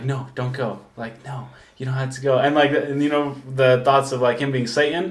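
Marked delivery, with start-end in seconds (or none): 0.0-2.4 hushed, soft half-whisper under the breath. Retelling how someone begged them to stay: imitating someone half-whispering. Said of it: "he started, like, whispering it".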